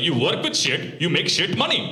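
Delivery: mock pissed-off father scolding, rising pitch. Retelling how dad reacted about plumbing work: imitating angry dad. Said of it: "Now he's all pissed off".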